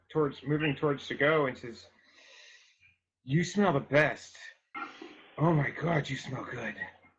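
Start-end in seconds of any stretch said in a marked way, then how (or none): 3.2-6.7 eerie, unsettling, creepy voice, not menacing. Voicing a soldier circling the group, sniffing everyone: creepy, not threatening. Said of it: "in a really kind of creepy way".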